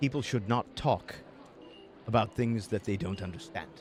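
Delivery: soft mutter, half to himself, under the breath. Narrating the elf seated at the listener's left, muttered under his breath. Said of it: "he kind of mutters under his breath".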